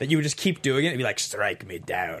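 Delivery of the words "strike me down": voice dropped very low, as deep as possible. Retelling how friends kept quoting the Emperor's line: quoting the Emperor. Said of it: "I've quoted his lines from this movie".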